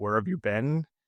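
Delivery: ordinary talk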